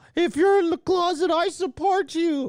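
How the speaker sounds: very high, slow, mock sympathetic voice.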